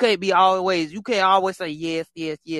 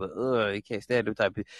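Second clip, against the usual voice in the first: usual speaking voice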